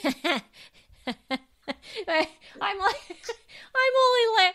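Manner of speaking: talking through laughter. Trying to answer another speaker, laughing while talking. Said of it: "Why are you laughing?".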